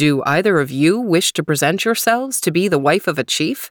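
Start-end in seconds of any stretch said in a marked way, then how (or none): none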